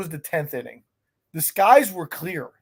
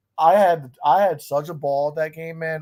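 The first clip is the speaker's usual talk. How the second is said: ordinary talk, nothing marked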